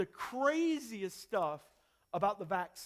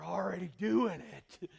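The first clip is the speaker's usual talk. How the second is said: very creepy, rough, creaky voice; 4 semitones lower than usual. Retelling snatching a phone and answering a conspiracy claim: creepiest Alex Jones voice. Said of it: "In the creepiest Alex Jones voice I could muster".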